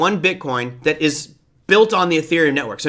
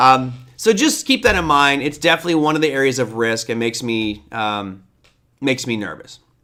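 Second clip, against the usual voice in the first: ordinary talk, nothing marked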